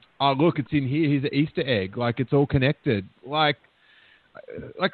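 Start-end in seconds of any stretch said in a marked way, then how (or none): none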